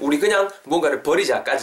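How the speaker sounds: plain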